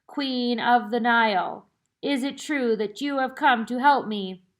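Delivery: hollow, echoing ghostly voice. Narrator reading a ghost addressing two people who came to help, hollow, echoing Hatepi voice. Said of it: "She spoke in a hollow, echoing voice".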